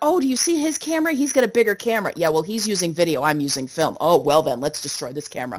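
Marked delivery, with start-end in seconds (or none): 0.0-2.1 excited, eager, worked-up, pitched-up chatter. Retelling how an excited man reacted, imitating someone all excited. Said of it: "He's all excited".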